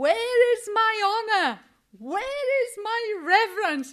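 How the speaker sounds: impassioned preacher-style shout, very loud and high. Recalling passionately reading a Bible chapter aloud; retelling shouting a verse. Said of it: "and I was shouting".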